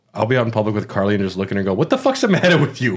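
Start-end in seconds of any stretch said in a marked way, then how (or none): 1.8-3.0 high, put-on tough-guy mobster voice, barked. Retelling doing a bit in public with Carly: Sopranos voice. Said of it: "I'm just doing a, a bit".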